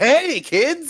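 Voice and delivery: high, very cartoony voice. Describing how Sonic usually sounds in the games: very cartoony Sonic voice. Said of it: "very cartoony, like".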